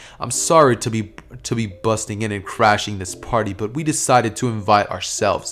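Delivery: normal talking voice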